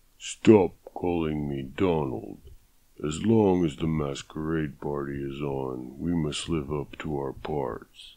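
deep, hollow, slow, unhurried. At a masquerade party, a man playing Death answers Abigail, in a deep hollow Death voice. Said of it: "Death demanded as he pushed the French doors open. ... Abigail smiled at the deep, hollow tones coming from behind the mask".

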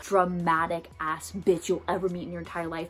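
normal talking voice

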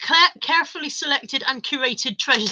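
ordinary talk

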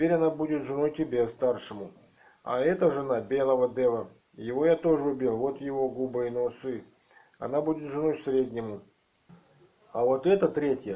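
plain reading voice

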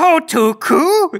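high-pitched, slow little creature voice.

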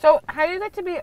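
speaking around chewed food. Speaker starts asking a follow-up question while eating; talking with food in mouth. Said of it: "Sorry, I have food in my mouth".

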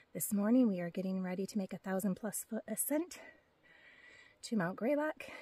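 winded, soft, breathless, out of breath. Hiking vlogger just came uphill, greeting viewers, out of breath. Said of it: "I'm out of breath because I just came uphill".

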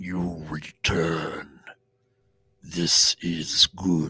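looming, towering giant's voice. Narrating a scene, voicing a giant silhouette looming over a character: booming voice. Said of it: "booming voice".

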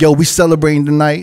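normal talking voice

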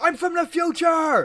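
very high, shrill, drawn-out fed-up scream. Retelling cracking at an annoying sister, the speaker re-enacts screaming at her. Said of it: "so I just screamed at her".

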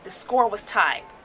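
plain reading voice

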